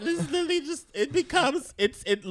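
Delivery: very high, excited squeal.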